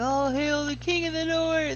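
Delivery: put-on unhinged, wild, crazy hollering. Retelling what a man yelled as he reached the gate, in a crazy voice. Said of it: "he yelled in this crazy voice".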